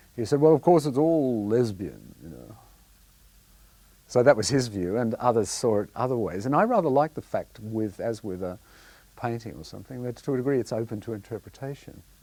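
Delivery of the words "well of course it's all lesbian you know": big, booming voice with swooping pitch. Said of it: "in a great booming voice".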